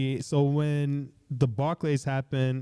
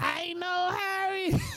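mock very high, shrill screaming yell; 3 dB quieter than usual. Retelling how a friend screamed at a security guard: imitating someone screaming. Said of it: "screaming at the, the security guard".

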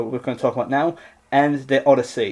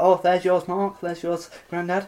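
mock, high, pointedly passive-aggressive tone; 5 semitones higher, 3 dB quieter than usual. Retelling how nana, annoyed, handed out tea: imitating passive-aggressive tone. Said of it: "quite passive-aggressive".

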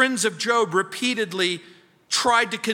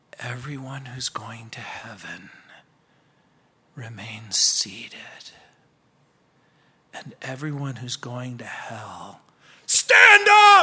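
put-on whispered delivery, lower pitch; 9 semitones lower than usual. Retelling a preacher's prank on a sleeping churchgoer: imitating a whisper. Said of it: "and he whispers".

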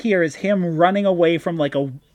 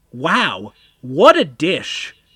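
hammy theatrical reading, slow, swooping, every word dragged; 2 semitones lower, 3 dB louder than usual. Doing a dramatic reading of a comic line as Warren Worthington: dramatic reading. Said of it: "I will do a dramatic reading of".

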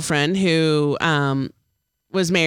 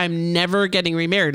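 ordinary delivery

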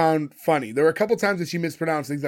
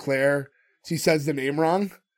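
normal talking voice

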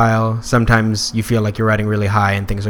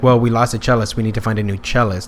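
normal talking voice

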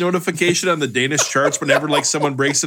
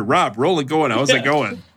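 usual speaking voice

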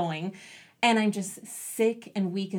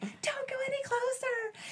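very high, hushed, yelled whisper; 5 dB quieter than usual. Retelling a call over the radio while watching through binoculars: imitating a whisper-yell. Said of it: "whisper yelling in the radio".

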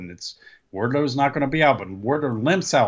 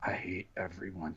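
low, very hushed mutter under the breath; 6 semitones lower, 17 dB quieter than usual. Retelling what a commentator said under his breath, Taz muttering low. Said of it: "Taz real low, but low enough, goes".

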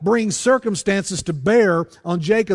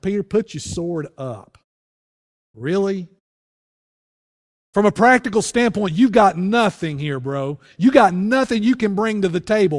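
pointed, forceful, mocking, sarcastic delivery. Acting out what Jesus said to Peter, retelling in a forceful, sarcastic tone. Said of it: "a little bit of a sarcastic tone".

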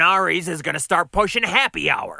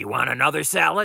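plain

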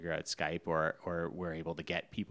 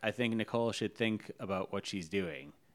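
plain

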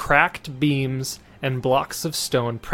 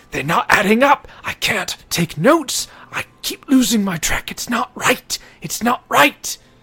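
very high, frantic, panicked ghost voice; 10 semitones higher, 6 dB louder than usual. Narrator voicing a figure whose hand passes through his quill: frantic ghost voice. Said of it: "he's just like frantically".

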